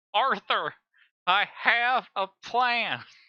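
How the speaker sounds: very high, loud video game character voice. Comparing characters' plans, quoting a line as a Dutch impression. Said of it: "that's my best Dutch impression".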